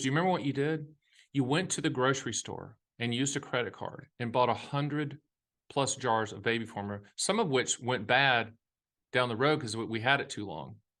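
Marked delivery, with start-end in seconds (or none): none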